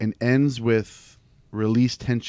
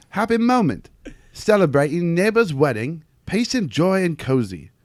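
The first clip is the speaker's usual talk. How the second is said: clumsy, bad, put-on English accent; 6 semitones higher than usual. Asked by the others to read the third rule aloud in an english accent. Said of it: "you read this in your English accent".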